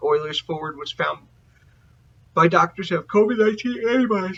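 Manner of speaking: words pushed out mid-yawn. Reading a hockey news item, yawning while talking. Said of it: "I'm so sorry for yawning".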